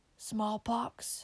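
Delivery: muttering. A sick man mutters an answer to the minister's question. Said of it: "muttered the sick man".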